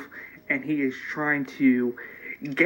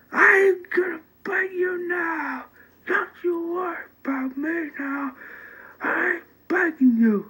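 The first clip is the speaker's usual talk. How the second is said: put-on angry ranting voice, higher pitch. Retelling a character's rant on a roof, imitating someone pissed off. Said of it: "he gets really pissed off".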